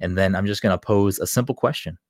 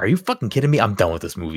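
put-on angry voice, faster. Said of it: "Jen was fucking pissed".

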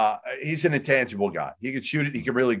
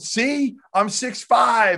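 mock-yelling, much higher and slower, imitated scream; 11 semitones higher than usual. Retelling how a man went crazy at a question, imitating his yelling. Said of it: "Starts yelling, screaming".

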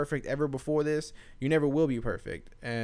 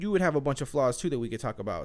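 normal talking voice

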